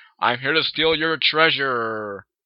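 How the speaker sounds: slow, lumbering giant monster voice, me drawn out. Reading a story, a character playing a treasure-stealing monster speaks in a giant monster voice. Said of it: "doing his best to impersonate a giant monster".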